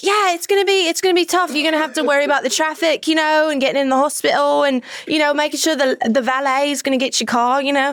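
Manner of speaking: put-on British accent. Retelling having to keep faking being british in a conversation, put-on british accent. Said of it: "Now I have to like be British".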